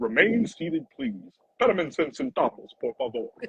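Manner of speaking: sing-song amusement ride announcer voice. Retelling saying a ride announcement together with another man, in ride announcer voice. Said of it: "I could already see your voice working like on a ride".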